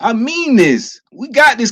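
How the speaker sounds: earnest, heartfelt, slow, emotional insistence. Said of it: "'cause I'm getting emotional here".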